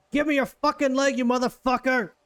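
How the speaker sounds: furious shouting. Voicing Blister yelling at a screaming captive: Blister yelling at the captive. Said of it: "and Blister is like".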